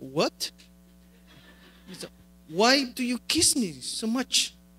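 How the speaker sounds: put-on soft American accent. Speaker retelling their reply when he asked a question, in an American accent. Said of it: "con mi acento americano".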